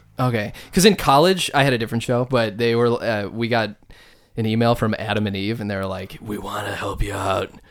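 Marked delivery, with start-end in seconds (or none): 6.2-7.5 put-on sultry voice, lower, quieter, slower. Retelling an email his college show got from a company: put-on sultry Adam and Eve voice. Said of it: "It's good that you knew to read the email in that voice".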